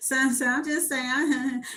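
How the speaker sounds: put-on woman's laughing voice. Retelling the woman's reply to being asked about a threat, imitating a woman laughing. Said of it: "you laughing 'cause you sound stupid".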